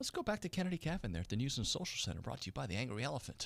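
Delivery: very soft, quiet, hushed whisper. Handing over to the news and notes segment: whispering. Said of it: "as I use this whisper voice".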